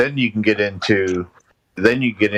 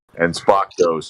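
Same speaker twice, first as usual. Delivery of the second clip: usual speaking voice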